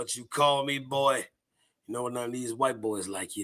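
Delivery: low, soft voice sunk down into the throat. Quoting a line from a movie, voice dropped into the throat. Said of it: "like it drops right here".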